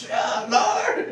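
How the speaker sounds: desperate, high-pitched, loud screaming.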